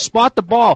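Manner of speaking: high screaming. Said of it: "he is screaming at the officials".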